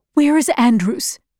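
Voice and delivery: ordinary talk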